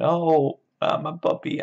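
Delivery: put-on very high, loud, grief-stricken, childlike voice. Retelling the story, the speaker acts out a character's reaction: imitating Lenny's heartbroken grief. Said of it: "he's all heartbroken".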